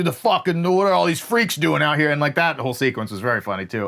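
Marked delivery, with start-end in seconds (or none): 0.0-2.1 put-on middle-aged dad voice, faster. Describing a movie character, the speaker mimics him: imitating a middle-aged dad. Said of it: "the middle-aged dad who doesn't understand pronouns and and is like".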